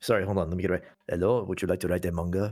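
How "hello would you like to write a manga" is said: poor, bad put-on French accent. Imagining the Louvre asking someone to write a manga, in a bad fake French accent. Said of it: "That's not a good French accent".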